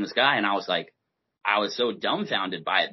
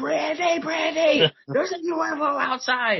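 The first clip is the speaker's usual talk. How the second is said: put-on scream, much higher; 3 dB louder than usual. Retelling how he filmed a UFO and screamed for his roommate; retelling a scream. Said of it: "I'm screaming".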